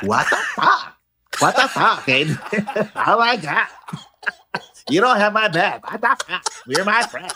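put-on, high Valley Girl accent. Speaker imagines being in a friend's place and reacting, Valley Girl voice. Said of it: "You would have gone all Valley Girl".

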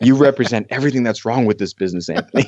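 dripping with contempt, disdainful and scornful. Speaker retelling how another actor looked at him: mock-disdainful. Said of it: "he looks at me with such disdain and he's just like".

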